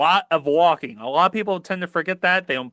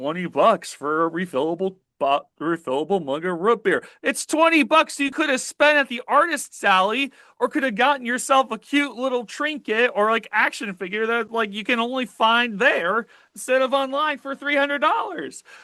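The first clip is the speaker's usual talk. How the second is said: cracking, breaking, pitched-up voice; 6 semitones higher than usual. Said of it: "My voice is cracking".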